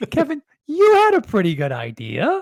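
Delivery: pitch climbing up toward the word "idea". Mimicking how someone leads off an episode, voice going up through to idea. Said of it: "your voice going up".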